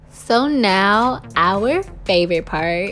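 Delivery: very slow drawl, dripping mock enthusiasm, sarcastic. Introducing the parting step of a hair tutorial: sarcastic. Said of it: "I'm being sarcastic".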